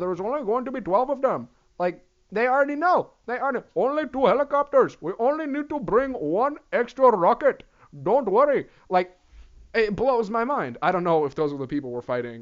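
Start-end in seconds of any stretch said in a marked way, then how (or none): 0.0-8.7 put-on Middle Eastern accented speech. Playing the people we're fighting, in a put-on Middle Eastern voice. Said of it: "that's my only, like, Middle Eastern voice".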